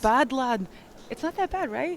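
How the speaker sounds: proud Scottish accent. Someone who imitates accents all day shows off a Scottish accent. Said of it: "I've got an absolutely great Scottish accent for you".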